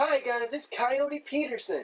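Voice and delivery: very high-pitched voice. Describing a man's voice, then imitating Coyote Peterson soft and high. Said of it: "he's got like this real soft, high pitched voice too. He's like".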